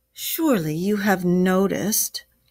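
ordinary talk

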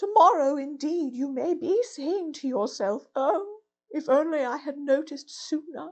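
faint, weakened voice. A toad lying very still and flat murmurs to the rat: weak, feeble voice. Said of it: "He certainly lay very still and flat, and his voice was weaker and his manner much changed. ... and his voice was weaker and his manner much changed".

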